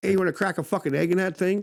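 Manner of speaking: high, loud mock yell.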